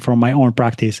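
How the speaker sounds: ordinary talk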